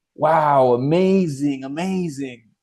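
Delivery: sarcastic, fake-impressed, fake enthusiastic tone. Speaker mocks the death benefit most agents sell, sarcastic mock enthusiasm. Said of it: "That's sarcasm, by the way".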